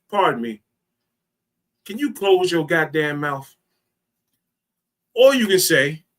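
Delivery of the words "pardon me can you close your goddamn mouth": sweetly polite tone, much quieter. Speaker showing how tone changes a rude request, very nice polite tone. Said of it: "in a very nice way ... you can change the tone".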